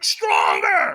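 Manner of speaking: put-on, very high-pitched, shrill scream. Retelling a firewalk trainer who got in his face: imitating a trainer screaming. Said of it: "he got in my face and screamed at me".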